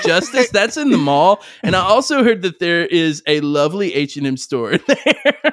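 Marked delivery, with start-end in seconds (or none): none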